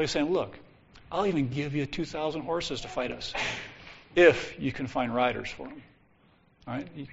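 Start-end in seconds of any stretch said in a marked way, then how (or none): none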